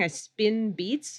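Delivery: plain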